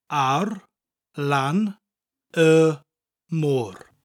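very slow, careful, word-by-word Welsh. Showing a learner a Welsh phrase again: slowed down. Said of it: "I'll slow that down".

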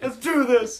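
put-on high, loud, excited little boy voice.

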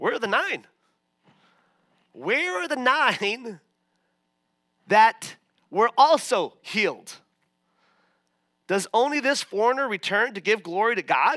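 acted-out dry, pointed, sarcastic tone. Retelling a scripture scene, voicing Jesus with put-on sarcasm. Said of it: "in a sarcastic way, he's like".

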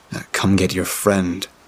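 plain reading voice

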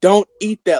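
high-pitched yelling. Retelling a friend's warning not to eat the candy: imitating a friend yelling. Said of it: "yells at".

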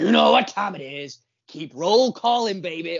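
rough, gravelly put-on voice. Starting the roll call in a co-host's place: gravelly Matt voice. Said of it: "I'm doing my best gravelly Matt voice".

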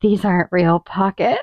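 put-on sultry, seductive voice, very low. Recounting a make-out moment, repeat the line: retelling a seductive line. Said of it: "I really seductively go".

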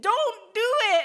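shrill, high, very loud screaming yell. Retelling a surfing mishap, warning another surfer: retelling a scream. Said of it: "and I'm screaming".

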